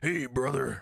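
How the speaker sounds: very loud, high wrestling-promo bellow. Asked about a Randy Savage voice, say you do another one instead, a Hulk Hogan impression. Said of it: "I do more of the Hulk Hogan".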